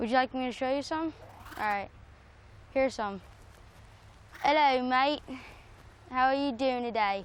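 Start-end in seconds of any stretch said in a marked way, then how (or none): 4.4-7.2 put-on Australian accent, casual talking. Showing off accents on request, starting with an australian accent. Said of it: "That was an Australian accent".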